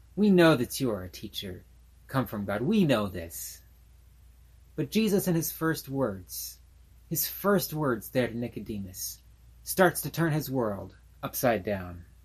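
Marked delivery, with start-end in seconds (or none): 0.2-3.6 put-on condescending, respectful tone, pitched lower. Retelling a visitor buttering up a teacher, in a mock-condescending tone. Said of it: "almost a condescending tone in his respect".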